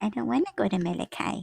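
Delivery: dead-on mimicked voice, fast and creaky. Imitating how the other speaker sounds: imitating the other speaker. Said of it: "That's exactly how you sound".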